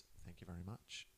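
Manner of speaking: hushed whisper. Retelling how a man leaned down to a woman and thanked her, whispered.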